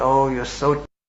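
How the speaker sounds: imitated sarcastic, regal-sounding tone. Retelling what the king said to the palanquin carrier: imitating a sarcastic king. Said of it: "very sarcastically".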